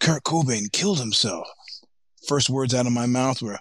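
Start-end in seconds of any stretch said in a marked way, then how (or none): 0.0-1.5 play-acted, out-of-breath, breathless, urgent voice. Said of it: "He's all breathless".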